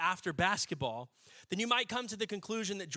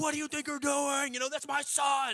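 furious, angry, high-pitched yelling; 7 semitones higher than usual. Retelling the speaker's dad yelling at another driver, retelling an angry yell. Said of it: "yelling at him like".

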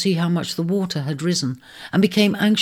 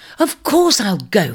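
curt, irritated, loud, deliberate snap; 3 semitones higher, 5 dB louder than usual. In a read story, a woman told by the eagle that she must go answers, snapping. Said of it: "snapped Virgo".

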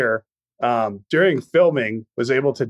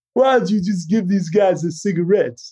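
higher, bad, rough seventies movie star voice; 7 semitones higher than usual. Imagining Travolta had played this role, a not-good 70s Travolta impression. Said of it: "It's not a good impression".

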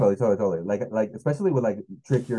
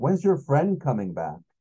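put-on yell, higher; 5 semitones higher than usual. On stage, the speaker retells a guy yelling at them, retelling a yell. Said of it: "the guy told like yells".

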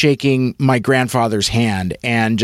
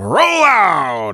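projected, declaiming, stage-style calling delivery; 4 semitones higher than usual. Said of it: "he wasn't projecting".

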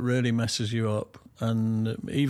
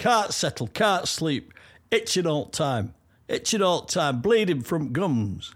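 put-on Northern accent, much higher, slower; 6 semitones higher than usual. Telling a joke about a man asking for help with his cat, put-on northern accent. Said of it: "I thought your accent was quite good".

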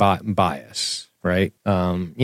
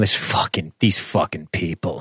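put-on smugness, lower pitch and slower; 3 semitones lower, 3 dB quieter than usual. Describing how they react to seeing cognitive bias, retelling a smug remark. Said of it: "I smugly recline in my chair and I go".

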